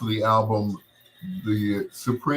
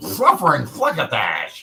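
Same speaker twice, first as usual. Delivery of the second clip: cartoon cat voice, swooping wildly, spitting the words; 2 semitones higher, 3 dB louder than usual. Showing a favorite Looney Tunes character voice: Sylvester voice. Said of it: "I can do his voice really, really well".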